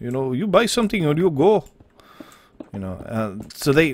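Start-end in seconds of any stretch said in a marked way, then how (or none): 0.3-1.7 put-on cartoon Indian accent, higher, o-ending syllables. Trying an Indian accent that someone requested: Simpsons Indian accent. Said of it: "I'm just gonna fall directly into the Simpsons".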